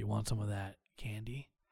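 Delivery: low, quiet, hushed, dark voice. Imagining Mr. Monopoly making sure someone has a good time, in Mr. Monopoly voice. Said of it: "I don't know why he sounds like that".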